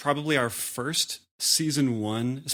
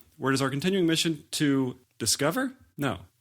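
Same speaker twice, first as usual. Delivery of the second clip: normal talking voice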